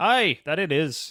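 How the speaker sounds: bad put-on Irish accent. Playing a local giving a traveller directions to Zenaris, in a bad Irish accent. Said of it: "I apologise for my accent".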